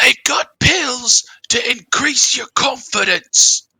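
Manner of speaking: terrible put-on British accent, very high and loud. Quoting a roadside speaker from a sample, in a terrible British accent. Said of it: "Sorry for my terrible British accent".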